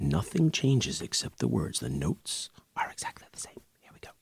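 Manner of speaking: hushed whisper. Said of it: "I don't know why I'm whispering".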